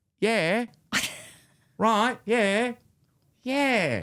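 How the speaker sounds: put-on very drawn-out, slow, high Australian accent. Showing how a present-listener cousin gets the rhythm going, in [name]'s Australian accent. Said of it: "my way into the Australian accent".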